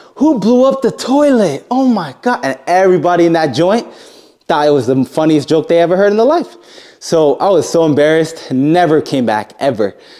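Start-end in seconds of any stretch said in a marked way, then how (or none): 0.2-2.4 very high, stretched-out, drawn-out shout. Retelling how someone in the dojo mocked him: imitating someone yelling. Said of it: "he yells out loud".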